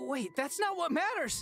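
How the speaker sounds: shouting. Interrupting a family introduction, yelling. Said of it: "No more yelling".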